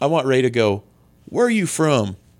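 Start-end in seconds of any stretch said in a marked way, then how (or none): 1.3-2.1 put-on Southern accent with raised voice and higher pitch. Imagining a Star Wars scene, voicing Rey in a southern accent. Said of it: "Did you just do a southern accent for Rey?".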